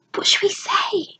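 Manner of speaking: quiet whispered voice. Reading a story aloud, a girl asks quietly near goblins: whispering. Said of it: "she whispered".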